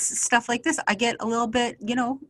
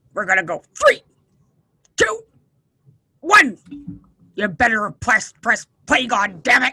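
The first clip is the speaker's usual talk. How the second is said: loud, grouchy, cranky voice with swinging pitch; 7 dB louder than usual. Counting down for someone to press play, grumpy countdown. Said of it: "I'm gonna count it down grumpy".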